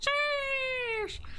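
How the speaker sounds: very high, excited, hyped squeal.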